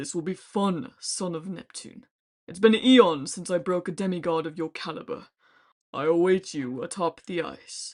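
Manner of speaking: huge, booming, resounding giant voice. Narrator reading a giant's voice in a vast chamber, booming giant voice. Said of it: "The giant's voice boomed".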